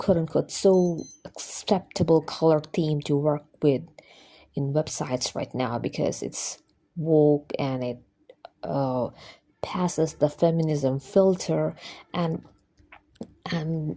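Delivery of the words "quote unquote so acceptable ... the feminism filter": usual speaking voice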